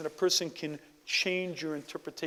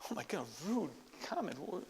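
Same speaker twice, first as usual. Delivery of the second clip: plain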